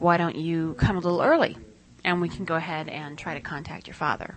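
ordinary delivery

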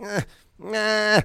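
put-on high, loud whine like a baby. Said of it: "she's going ... whining".

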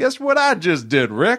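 drawl, a bit Cajun-sounding. Describing a TV villain and imitating his Cajun-like drawl. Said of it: "a very sort of Cajun, being like".

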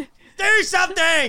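very high, shrill scream. During a game, turning to Fruity and screaming out to her. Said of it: "I'm like screaming out to Fruity".

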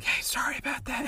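quiet, soft, hushed whisper. Retelling an apology to a guest while trying not to be heard: imitating own whisper. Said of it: "trying to whisper".

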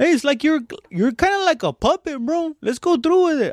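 Texas Mexican accent, hollow. Explaining how Texas Mexicans talk, demonstrating a Texas Mexican accent. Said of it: "It's like a little thing in your voice".

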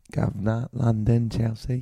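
put-on old English man accent. Asked which part of england, answering in an old man english accent. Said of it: "I'll do old man English".

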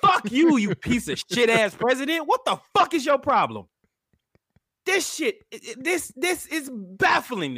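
furious, fed-up, high-pitched angry yelling. Ranting at the president for telling people to defy the governor, angry yelling. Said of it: "I'm really not trying to yell".

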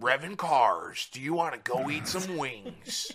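very slow monster-truck rally announcer voice. Joking about an over-the-top ad voice: monster truck rally announcer voice. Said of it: "Like monster truck, monster truck rally".

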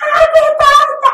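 mock, very high-pitched, loud, happy screaming. Recalling the birthday sparkler video, acting out their own retelling own screaming. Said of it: "all you can hear is me screaming".

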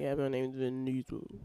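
low mumble with mouth barely open. Imitating how he talks without opening his mouth, Vin Diesel mumble, mouth barely open. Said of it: "he talks and he doesn't open his mouth all the way when he talks. So it's like".

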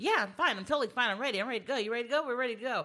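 fast, high, weird rattled-off chatter. Recapping a movie with friends, acting out Zach talking all fast and weird. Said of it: "just talking all fast, being weird".

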